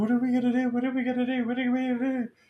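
put-on frantic, panicked babble, very high, rapid. Retelling how a friend reacted to the injury: imitating a friend freaking out. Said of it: "he started freaking out".

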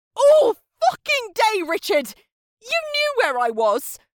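very high, shrill, swooping, raging scream. [name], inches from Richard's face, screaming at him. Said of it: "[name] screamed".

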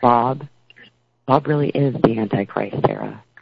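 low, soft, hushed voice. Speaker retelling a man holding her hands and saying this, in a lower, softer voice. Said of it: "he talks in a lower tone and a softer voice and says".

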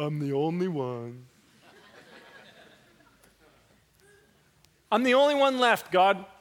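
woeful, self-pitying, gloomy moping. Reading a prophet's complaint to God, the speaker demonstrates it in an Eeyore tone. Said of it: "you want to read this in like an Eeyore tone".

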